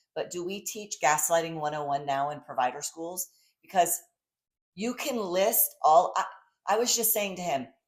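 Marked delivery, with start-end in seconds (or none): none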